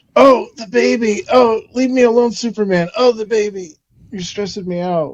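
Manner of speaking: high, put-on pleading tone of helpless distress. Retelling a scene where Erica fakes distress: imitating Erica's fake distress. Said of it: "That part where she's like".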